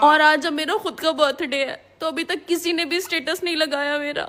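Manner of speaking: crying, tearful and weepy. On her own birthday, asked by someone why she's crying: crying. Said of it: "तुम रो क्यों रही हो?".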